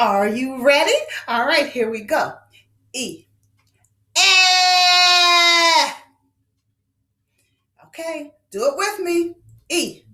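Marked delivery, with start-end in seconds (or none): 2.9-5.9 loud, long, stretched-out E vowel. Speaker models the e sound for boys and girls to repeat: stretched drawn-out vowel. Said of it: "let's stretch that E sound".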